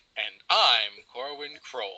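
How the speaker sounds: put-on conclusive, final-sounding tone. Retelling how a co-host said his name, imitating Corwin's final-sounding sign-off. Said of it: "the way that he said it".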